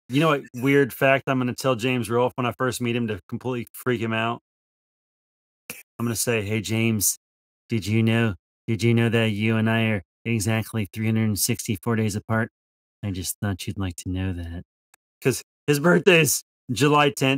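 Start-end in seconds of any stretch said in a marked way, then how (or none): 6.4-14.6 put-on, creepy voice. Acting out telling someone a strange shared birthday fact: put-on creepy voice. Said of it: "so I'm gonna say it real creepy like that".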